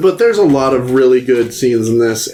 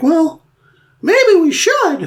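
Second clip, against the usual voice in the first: very high-pitched, slow, swooping voice. Describing a juror from Twelve Angry Men and quoting him: Mickey Mouse voice. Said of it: "He sounds like Mickey Mouse".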